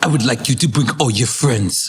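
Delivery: deep-voiced. Retelling what the boss said at a meeting: imitating Leo. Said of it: "I'm doing Leo impersonation".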